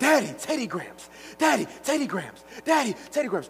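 put-on very high, nonstop begging child's voice, pleading and nagging. Imitating a child repeatedly calling to Daddy: imitating a begging child. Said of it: "It's like begging".

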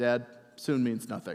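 flat, dead-level, very low-pitched deadpan. Retelling what someone said to his dad, retelling a deadpan line. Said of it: "just deadpan goes".

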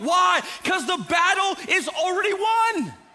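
excited, fired-up, high-pitched preacher voice. A speaker addressing a crowd in a bigger room, excited. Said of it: "Sorry if I get excited about it".

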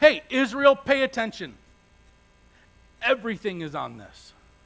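stern dad voice. Acting out Moses addressing Israel, Moses in a put-on dad voice. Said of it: "it hit dad voice".

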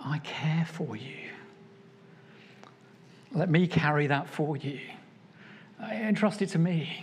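gentle and tender throughout. Speaker voices Jesus addressing the listener, in the tender voice of Jesus. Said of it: "hear the tender voice of Jesus".

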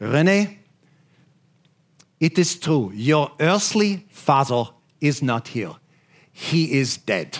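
put-on thick Swiss accent. Retelling word for word what Mom first said: thick Swiss accent. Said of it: "in her thick Swiss accent".

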